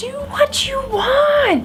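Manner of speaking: mock yelling, high-pitched.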